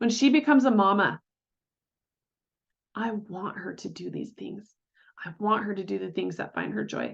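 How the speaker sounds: thick, choked-up voice catching with emotion. A mother imagining her daughter becoming a mom herself, getting choked up. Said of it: "I'm getting choked up just thinking about it".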